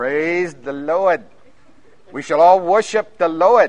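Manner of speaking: put-on very loud, thick Maine accent. Imitating a preacher from Maine who was there when they first came, in a thick Maine accent. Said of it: "he had his accent, thick accent".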